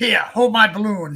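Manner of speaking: high, loud, sinister creepy clown voice. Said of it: "you got to do the voice as well".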